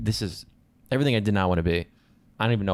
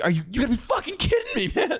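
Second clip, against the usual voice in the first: very high, climbing, swooping fed-up scream. Retelling a moment at work with endless revisions: retelling screaming at a computer. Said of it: "was screaming at my computer".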